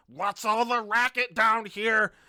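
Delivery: very loud, high-pitched, gnome-like creature screaming. A game master voices a gnome-sized creature coming down the steps, yelling and screaming. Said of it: "starts yelling and screaming in this like half gnomish".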